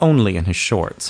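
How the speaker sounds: plain reading voice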